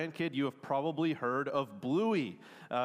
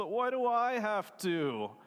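acted, high, childish whining voice; 7 semitones higher than usual. Retelling a cartoon scene where a dad asks his daughter to tidy: imitating Bluey whining. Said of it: "And Bluey whines".

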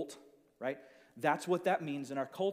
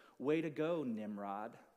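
slow, dry, biting sarcastic tone; 4 semitones lower than usual. Telling how a cartoon rabbit answers his hunter, retelling a sarcastic line. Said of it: "he sarcastically looks at Elmer Fudd and he says".

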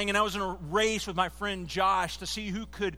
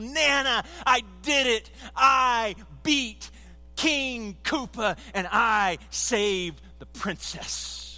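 put-on slow, drawn-out, gushing, excited little-kid voice; 3 semitones higher, 4 dB louder than usual. Recalling running to grandmother as a third grader, in an excited kid voice. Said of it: "in the most exciting third grade voice possible".

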